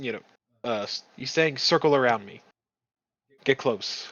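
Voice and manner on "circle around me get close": coaxing, beckoning, enticing tone. Describing the voice everybody hears in their head, mock-enticing voice. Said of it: "one that is enticing".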